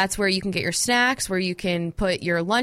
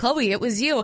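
ordinary delivery

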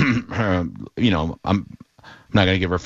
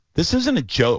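put-on appalled voice, higher pitch; 9 semitones higher than usual. Retelling how the instructor scolded the class: imitating an appalled instructor. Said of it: "almost appalled, almost appalled by me".

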